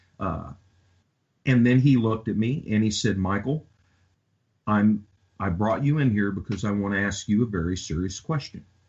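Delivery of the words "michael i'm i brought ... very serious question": ordinary delivery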